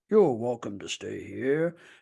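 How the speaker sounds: voice dropped very low and creepy. Recalling a king character who always creeped the speaker out, doing the King of the Misfit Toys voice. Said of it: "he has that voice and he talks".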